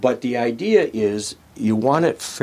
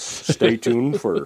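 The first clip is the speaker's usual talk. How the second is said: mock radio broadcaster announcer delivery. Showing off the big broadcaster voice just mentioned, in a fake broadcaster voice. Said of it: "my fake broadcaster voice".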